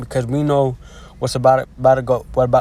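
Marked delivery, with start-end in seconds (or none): 1.2-2.6 stuttering, stumbling, repeating the words. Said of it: "I'm stuttering a lot".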